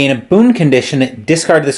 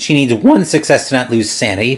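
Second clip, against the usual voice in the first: voice cracking. Narrating a board game turn for Diana, voice cracking. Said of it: "my voice cracked there".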